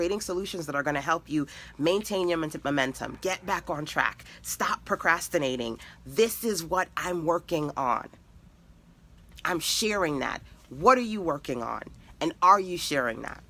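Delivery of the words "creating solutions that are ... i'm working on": ordinary talk, nothing marked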